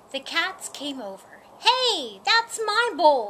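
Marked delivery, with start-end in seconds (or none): 1.6-3.3 high, loud, drawn-out shout. A tabby cat sees a dog feeding a kitten from its bowl, shouting. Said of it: "shouted the tabby cat".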